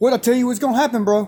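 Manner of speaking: put-on angry, annoyed voice. Retelling what an angry coach said when called over: imitating an angry coach. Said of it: "he's just all pissed".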